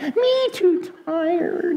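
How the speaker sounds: put-on tired, afraid, very high, slow baby piglet voice.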